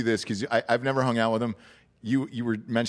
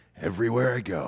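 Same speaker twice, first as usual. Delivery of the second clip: put-on laid-back drawl. Retelling a dinner story, quoting the actor: Jack Nicholson impression. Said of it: "You do a good Jack Nicholson".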